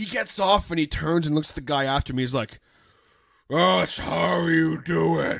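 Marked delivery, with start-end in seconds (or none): 3.5-5.4 huge, booming, creaky drawl, very slow. Retelling what a dancer said to the next player: imitating a massive voice. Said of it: "He had this massive voice".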